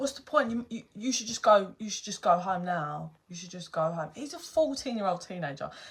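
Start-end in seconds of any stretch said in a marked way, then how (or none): none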